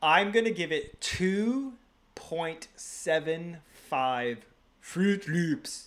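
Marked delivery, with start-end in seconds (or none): 2.1-5.9 put-on very slow Norwegian accent. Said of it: "Fruit Loops said in a Norwegian accent".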